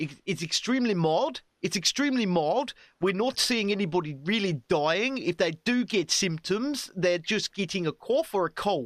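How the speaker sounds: put-on South African accent. Imitating a South African doctor speaking on TV: South African accent impression. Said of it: "I'll do my best impression".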